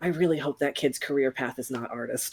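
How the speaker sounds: hushed, muttered half-whisper under the breath. Voicing a party member leaning over to another character: half-whispering in character. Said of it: "you'll hear him whisper".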